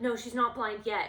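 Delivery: defensive voice. Retelling how a man answered when asked if his dog was blind, mock-defensive. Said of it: "And he got all defensive".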